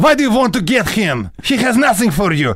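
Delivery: gangster tough-guy voice, very high. Asked for a taste of the video game voices: tough guy voice. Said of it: "give me a taste. Tough guy".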